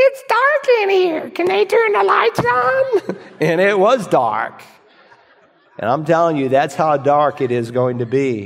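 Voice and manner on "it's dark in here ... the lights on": put-on tiny, squeaky, very high-pitched child voice. Retelling what the eight-year-old daughter said in the dark: Grace Anna's squeaky little voice. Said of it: "came up with a little squeaky voice".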